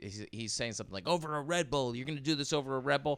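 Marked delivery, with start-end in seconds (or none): 1.1-3.2 high, mock unhinged screaming rant. Retelling a man in a supermarket screaming at a worker: imitating a man screaming. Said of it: "he's screaming".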